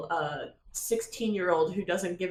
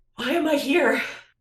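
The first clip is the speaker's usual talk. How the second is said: very loud, high, winded, out-of-breath voice; 8 semitones higher, 8 dB louder than usual. Player voicing Atticus as the two characters meet up, out of breath. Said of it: "Atticus is like out of breath".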